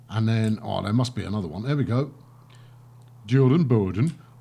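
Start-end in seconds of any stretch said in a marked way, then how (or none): 3.2-4.1 loud, awful fake Swedish accent. Reading out route names, the speaker tries a terrible swedish accent. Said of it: "that was my terrible Swedish accent".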